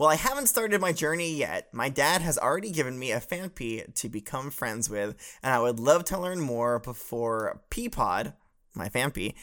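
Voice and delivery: ordinary talk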